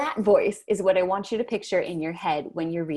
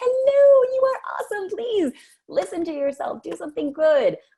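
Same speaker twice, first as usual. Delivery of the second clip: put-on very high, silly grandma voice; 12 semitones higher, 4 dB louder than usual. Showing how to talk kindly to yourself, Mrs. Doubtfire grandma voice. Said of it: "do this stupid sounding grandma voice".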